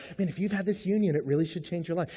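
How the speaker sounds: soft counseling voice. Showing how a counselor would say the line: gentle counselor tone. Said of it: "doesn't say that like a counselor".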